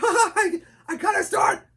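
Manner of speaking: very high, loud falsetto, pushed harder. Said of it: "so you start to push it".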